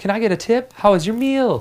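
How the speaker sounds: upward-slanting eager-to-please tone. Imitating a waiter who wants a tip: slanting up, trying for rapport. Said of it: "talk and trying for rapport".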